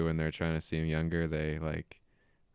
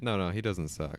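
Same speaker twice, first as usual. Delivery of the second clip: ordinary talk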